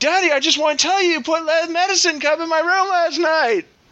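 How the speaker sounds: mock very high, insistent little-kid scream. Retelling trying to sleep while your child calls out, imitating child screaming. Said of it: "he's screaming".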